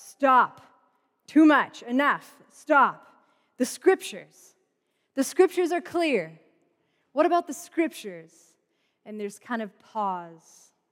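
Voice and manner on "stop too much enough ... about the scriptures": loud, stern shouting voice. Retelling a voice that shouts from the center at the group, imitating a stern shout. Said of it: "a stern voice, ... that sort of shouts".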